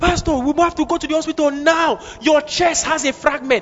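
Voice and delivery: mock shouting. Retelling how a man started shouting at the pastor, retelling a shout. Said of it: "He started shouting".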